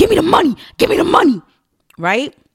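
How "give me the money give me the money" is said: very high, shrill, barking yell. Retelling being chased down by a man, imitating him barking at her. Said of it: "he's barking at me".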